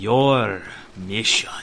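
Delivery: said sarcastically. A character confronting someone whose paths have crossed theirs again, sarcastic. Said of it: "I say as sarcastically as ever can".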